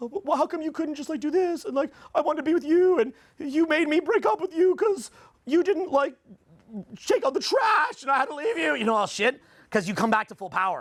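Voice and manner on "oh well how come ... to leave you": high, tearful, sobbing weepy crying voice. Imitating a woman who left and now regrets it: imitating someone crying. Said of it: "They sit there crying, going".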